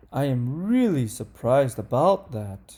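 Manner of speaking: pitch rising excitedly through "surprised". Reading a practice sentence aloud to show intonation, with rising intonation. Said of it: "the intonation goes up".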